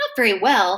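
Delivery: plain reading voice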